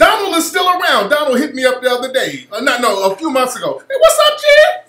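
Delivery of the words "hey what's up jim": very high, loud, squeaky little puppet voice. Quoting how a guy greeted him when he called recently, Elmo voice. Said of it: "he sound like Elmo".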